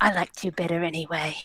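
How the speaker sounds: whispering. Speaking in character to a venomous pet while petting it: whispering. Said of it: "And just whisper".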